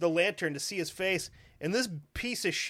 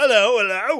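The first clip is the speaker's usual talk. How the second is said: very loud, put-on British woman's accent; 3 semitones higher, 13 dB louder than usual. A storyteller voices a woman opening a door and calling out, in a mock british woman voice. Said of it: "that's what all British women sound like".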